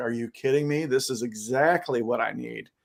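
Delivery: normal talking voice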